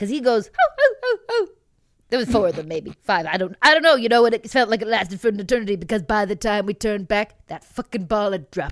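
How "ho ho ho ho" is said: tiny, very high, squeaky dog-like voice. Retelling what a man said that made everyone turn around, imitating a tiny high-pitched voice. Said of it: "with his high-pitched sure".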